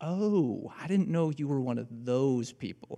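soft, small, judgy voice. Speaking to an audience, acting out the judgy voice in our heads, mock judgy voice. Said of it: "that little judgy voice chimes in and goes".

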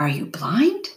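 with a gasp. Narrator reading the man on the beach's question to the narrator; gasping. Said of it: "He gasped".

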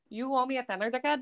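put-on Irish accent. Trying an accent after others called his accents trash, Irish accent. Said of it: "I can try some Irish".

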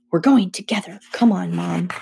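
ordinary delivery, nothing marked

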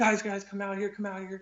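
put-on ecstatic yell. Retelling how an ecstatic man called the others outside: retelling an ecstatic yell. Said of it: "He yelled".

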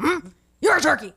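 aggressive, hostile tone. Retelling an older gentleman's reply to a turkey offer: imitating an aggressive old man. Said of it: "It was more aggressive than that".

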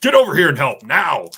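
very loud, high, commanding shout. Retelling calling the clowns over to help, in a reenacted commanding voice. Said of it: "the most commanding voice I get".

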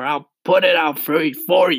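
high, loud shouted delivery. Narrator reads the centipede hurrying the glowworm, shouting. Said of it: "shouted the centipede".

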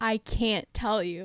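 anguished pained voice. Retelling a show scene where a boy won't explain: imitating anguished pain. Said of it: "the pain, the anguish".

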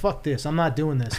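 ordinary talk

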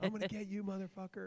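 threatening, very high, shrill yell. Recounting shouting a threat at someone outside at night, retelling a yell. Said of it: "I'm yelling motherfucker in front of it".

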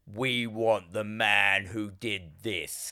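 low, hushed, menacing horror-villain voice. Speaker retells a priest's words over a corpse: Pinhead voice. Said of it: "That was a very good pinhead".

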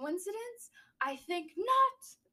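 put-on high, slow British accent. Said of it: "You said it like a British accent".

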